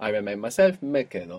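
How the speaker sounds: usual speaking voice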